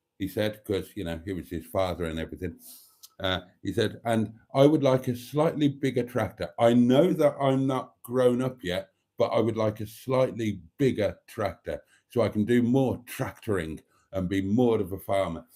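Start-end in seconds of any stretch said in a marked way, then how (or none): none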